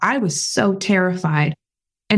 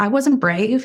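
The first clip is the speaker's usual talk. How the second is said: usual speaking voice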